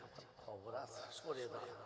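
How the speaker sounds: hushed fearful aside.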